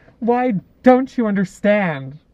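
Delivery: high, booming, drawn-out movie-line delivery. Quoting a film line that rings in memory: Charlize Theron voice. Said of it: "Charlize Theron's voice going".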